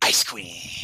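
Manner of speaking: hissed through a gleeful grin. Voicing Sun Dragon in a narrated scene, gleeful hiss. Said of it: "she just hisses in like a gleeful tone".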